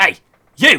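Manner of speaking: furious yell, high and very loud. A game narrator voices a stranger shouting at the players approaching town: very angry shout. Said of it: "you hear a very angry voice shout out to you".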